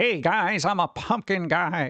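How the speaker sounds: put-on weird, strange old-fashioned delivery. Imagining a voice from the nineteen forties, weird old-timey voice. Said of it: "kind of weird old timey voice".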